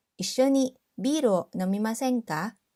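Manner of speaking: normal talking voice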